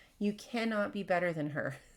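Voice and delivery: ordinary talk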